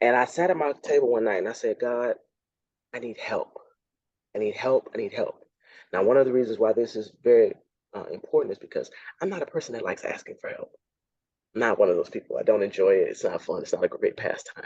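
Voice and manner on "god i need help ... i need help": heartfelt, earnest pleading tone. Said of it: "I'm pleading from my heart".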